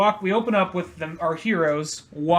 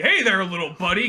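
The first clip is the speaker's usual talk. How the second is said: very creepy, overly chummy tone; 3 semitones higher than usual. Retelling a character's greeting with an arm around the shoulder: imitating a creepy greeting. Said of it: "in a very creepy".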